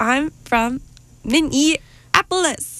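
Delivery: put-on high, cute little toddler voice. Retelling a two-year-old boy met at the airport, imitating a toddler's voice. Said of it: "he would say it like that every single time".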